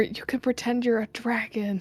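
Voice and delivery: whispering in a put-on voice. Speaking as Finn during the game: whispering in character. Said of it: "Finn's gonna whisper".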